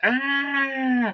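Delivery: scone with British pronunciation. Imitating the little scream she lets out, not a mad one: short high-pitched little "ah" scream. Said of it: "a little high-pitched, like".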